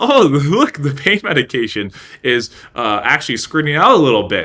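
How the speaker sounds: speech mixed with laughter.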